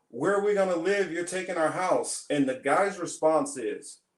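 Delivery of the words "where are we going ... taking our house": put-on screaming, upset and distraught outburst. Retelling a video where a daughter confronts her father: imitating someone screaming. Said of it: "his daughter is just screaming at him like".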